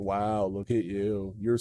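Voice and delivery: low, very quiet, super sarcastic announcer voice. Describing a hidden announcer in a video game, imitating a sarcastic announcer. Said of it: "an announcer ... who's just super sarcastic".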